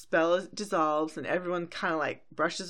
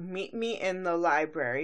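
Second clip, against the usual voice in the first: ordinary talk, nothing marked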